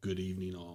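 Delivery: spooky put-on character voice. Greeting the podcast audience at the show's opening: Vincent Price voice. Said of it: "like a Vincent Price?".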